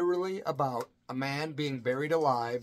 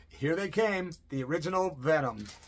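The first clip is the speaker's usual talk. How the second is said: ordinary talk, nothing marked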